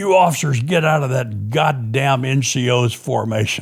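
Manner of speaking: put-on rough, gravel-voiced shout. Retelling a captain yelling at officers during formation: imitating Jimmy Dobbs's gravelly yell. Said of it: "he yells out in this gravelly, rough voice".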